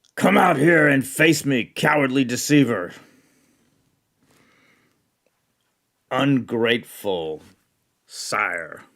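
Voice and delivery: full-throated, put-on warrior scream. Voicing a warrior outside calling his foe out: screaming in character. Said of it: "he is outside and he screams".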